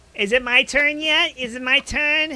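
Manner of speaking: put-on high, childlike little voice like a five-year-old. Waiting in a line around the block for a turn, sounds like a five-year-old. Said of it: "He sounds like a five-year-old".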